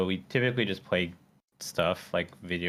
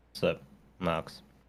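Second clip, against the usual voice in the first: flat, dry, expressionless deadpan delivery; 2 semitones lower, 3 dB quieter than usual. Co-host greeting the host right after being introduced, deadpan. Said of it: "You just get that deadpan [name]".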